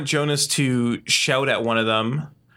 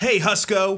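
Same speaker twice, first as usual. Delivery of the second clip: pitched-up call-out in character voice; 6 semitones higher than usual. Voicing a character who shouts a greeting across: in-character shout. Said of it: "Jonas shouts in his voice".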